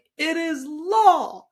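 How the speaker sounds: loud, high proclaiming voice with "law" drawn out. Quoting a woman's line from a YouTube talk in Oprah voice. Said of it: "in her Oprah voice".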